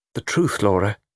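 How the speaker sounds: plain reading voice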